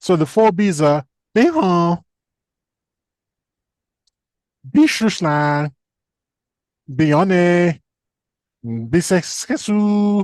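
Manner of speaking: very slow, deliberate, attempted South Korean accent. Listing four items while trying an admittedly failing attempted South Korean accent. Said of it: "I can't do a South Korean accent".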